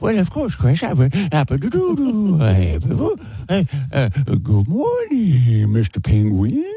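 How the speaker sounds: very slow, drawn-out, silly put-on voice with swooping pitch. Answering a listener letter that asks for a good-morning greeting: Adam Sandler voice. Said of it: "say good morning to me in your Adam Sandler voice".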